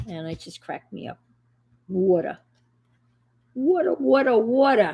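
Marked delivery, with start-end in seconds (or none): 1.9-4.9 put-on heavy, thick New York accent, laid on. Retelling a flight attendant's drink offer; thick new york accent. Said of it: "really thick New York accent".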